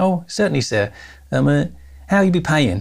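put-on Cockney accent. Retelling buying a one-way ticket to Jamaica at the airline desk, imitating a Cockney accent lady. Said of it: "Cockney accent lady".

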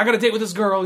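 put-on excited voice. Retelling a movie scene where a character gets a date: imitating excited speech. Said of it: "he's all excited".

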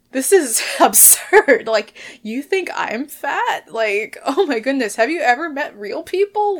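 loud, incredulous disbelief, laughing it off. Retelling the reaction after a man in a van yelled an insult: acting out own laughter. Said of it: "I just started laughing".

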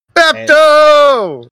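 shrill, very high, loud, drawn-out scream. Playing a character who spots a friend in a fight: in-character scream. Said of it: "Walkie just screams".

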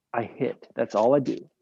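ordinary talk

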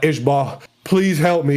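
ordinary talk

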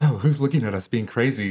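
self-conscious, flustered, embarrassed little outburst. Retelling a commercial where a woman looks around: imitating an embarrassed woman. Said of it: "she's all embarrassed".

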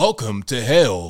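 deep, dropped action-hero voice. Complaining that game heroes always sound deep, quoting in a deep Duke Nukem voice. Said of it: "why are their voices always so deep".

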